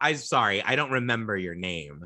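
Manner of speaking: put-on bitchy, snotty little girl voice. Retelling what a little cousin said on meeting: imitating a bitchy little girl. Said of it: "in such, like, a fucking, like, little bitchy way".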